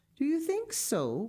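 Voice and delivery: unsure and tentative, very high voice. A girl trying to stand on her feet replies to a suggestion; hesitant. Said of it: "said Clara hesitantly".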